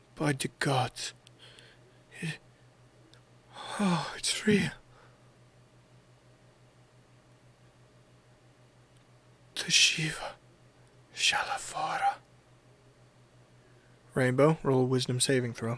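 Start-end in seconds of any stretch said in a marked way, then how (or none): 0.2-12.2 slow whisper, barely audible, under the breath. Voicing a character in a game scene, speaking under her breath. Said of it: "Under her breath".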